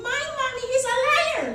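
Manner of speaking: put-on shrill, very high, loud four-year-old girl voice. Speaker quoting a four-year-old who told anyone who would listen; four-year-old high-pitched voice. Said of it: "that four-year-old high-pitched voice".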